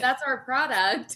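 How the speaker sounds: stern telling-off tone. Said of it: "I got on her".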